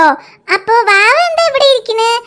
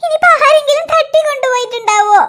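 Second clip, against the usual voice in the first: crying out, sobbing. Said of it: "നീ കരയല്ലേ".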